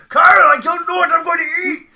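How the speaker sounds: shrill, loud, ridiculously exaggerated Japanese accent. Describing a scene, quoting the Japanese guy in Trey Parker's ridiculous Japanese accent. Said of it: "doing that ridiculous Japanese accent".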